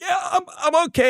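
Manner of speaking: very high, pitched way up, fighting back tears. Retelling answering the coach after a painful hit: imitating holding back tears. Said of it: "trying to hold back tears".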